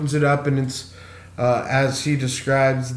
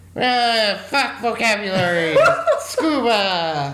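put-on nerdy kid voice, much higher; 8 semitones higher than usual. Recapping a TV scene in conversation, doing the Minkus voice. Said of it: "That's my Minkus voice".

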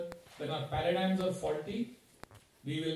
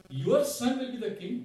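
loud, heavy mock sarcasm; 4 semitones higher, 5 dB louder than usual. Retelling Manthara scolding Kaikeyi: retelling a sarcastic remark. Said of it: "Very sarcastic".

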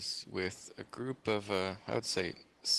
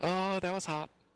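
put-on piping, very high voice of a small child; 9 semitones higher than usual. Retelling a kid in the movie theater, imitating a little kid. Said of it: "this little kid going".

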